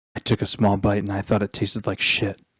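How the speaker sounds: whispering. Voicing a character answering a whispered remark: whisper. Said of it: "she'll whisper back".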